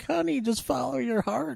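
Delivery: put-on very high, creaky, senile old woman voice. Summarizing a love story, the speaker quotes a side character, imitating a senile old woman. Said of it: "the senile old woman is like".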